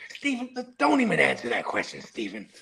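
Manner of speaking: pitch swinging up and down. Talking football with a co-host, doing an impression: Uncle Jerry voice. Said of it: "That's my Uncle Jerry voice".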